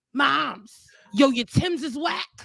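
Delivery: put-on high, slow, raspy two-year-old toddler voice. Retelling what a two-year-old brooklyn kid said: imitating a raspy-voiced toddler. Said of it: "every kid has a raspy voice".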